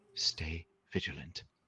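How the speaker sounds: whispering under breath. Granting two allies dark vision, whispering under breath. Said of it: "I whisper under my breath as I look".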